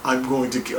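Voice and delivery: put-on poor British accent. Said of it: "I can't do British".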